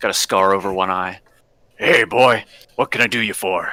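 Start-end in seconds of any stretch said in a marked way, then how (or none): 1.8-3.7 put-on rough, gruff, elderly dwarf voice. Game master voicing a dwarf behind a shop counter greeting the player, gruff elderly dwarf voice. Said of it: "a gruff elderly dwarf is sitting behind the counter".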